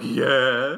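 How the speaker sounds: speaking with mouth full. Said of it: "That's my chocolate eating voice".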